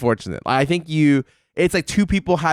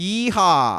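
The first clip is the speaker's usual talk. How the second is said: weak Texan yeehaw, much higher pitch; 4 semitones higher than usual. Asking a co-host for a yeehaw, then trying one first, a weak cowboy yeehaw. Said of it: "Give me your best yeehaw".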